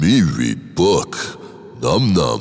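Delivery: very slow, effortful, plodding speech with every word dragged. Retelling a rehearsal, voicing the shark as told: Stallone voice. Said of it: "my best Stallone".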